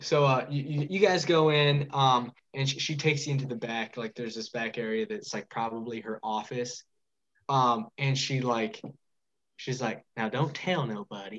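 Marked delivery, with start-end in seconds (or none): 10.1-11.4 put-on Southern accent, drawled and hushed. Voicing an innkeeper leading the group to her office: put-on Southern drawl. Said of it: "speak with this accent there on my own".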